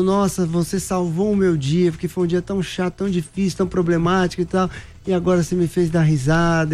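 ordinary talk, nothing marked

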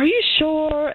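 high disbelieving voice.

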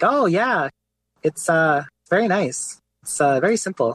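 put-on thick Quebecois French accent.

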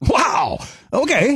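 stunned, shocked, very high-pitched exclamation. Another speaker calls out an emotion to act, and the speaker reacts: shocked. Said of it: "How about shocked?".

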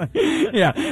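high-pitched speech with laughter through the words.

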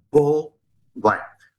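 whispered. Retelling what a man on a plane said to him: imitating someone whispering. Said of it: "He whispers and he says".

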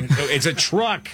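slow, high, firm and stern parental tone.

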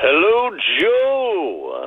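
put-on weatherman announcer voice.

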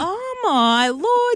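very high, slow, exasperated inner groan.

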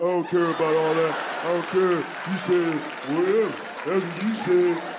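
stock put-on caveman voice. Acting out women imitating men: put-on caveman voice. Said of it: "It's the same caveman voice".

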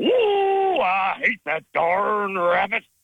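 high, swooping cartoon cowboy voice, stretched "ooh". Talking about Looney Tunes characters, the speaker does a Yosemite Sam voice. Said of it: "But I like doing Yosemite Sam".

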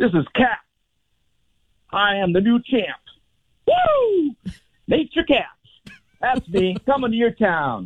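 very high-pitched, whooping, swooping triumphant boasting. Playing a wrestler who just won a first match: triumphant wrestler post-match brag. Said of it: "Now you are Kat, and you just won your first match".

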